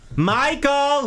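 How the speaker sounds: very high yell, distant-sounding. Acting out a woman yelling for Michael from the den, retelling a yell from another room. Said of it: "you're yelling".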